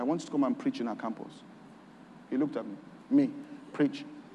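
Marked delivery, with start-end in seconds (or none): 0.0-1.3 said quietly, in a lower voice. Retelling their own answer to a man who called for them, said quietly. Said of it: "I'd say quietly".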